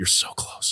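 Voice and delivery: soft, breathy, hushed close whisper. Acting out a student council president in an ear: imitating someone whispering. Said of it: "just whispering in his ear".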